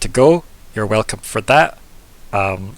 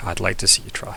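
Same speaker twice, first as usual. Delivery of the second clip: playful, under the breath; 2 semitones lower, 6 dB quieter than usual. Voicing a character who chuckles to herself: playful, under her breath. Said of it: "under her breath, like, in a, almost a very playful way".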